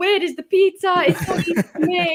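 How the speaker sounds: high, loud Italian-accented voice.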